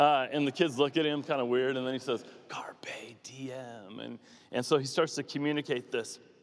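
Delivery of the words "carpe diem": put-on creepy voice, much quieter and lower. Retelling a movie scene, Robin Williams coming in behind the kids: imitating Robin Williams' creepy tone. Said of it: "very creepy tone".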